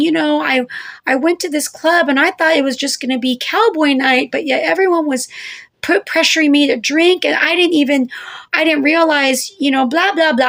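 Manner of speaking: play-acted weepy, tearful, crying, pleading voice. Retelling lying to a police officer after a failed breathalyzer: imitating own past crying. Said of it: "crying, saying".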